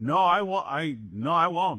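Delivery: broken, broken-up English sentences. Retelling how he talks to a Mexican who speaks half Spanish, in broken-up English. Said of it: "break up my sentence".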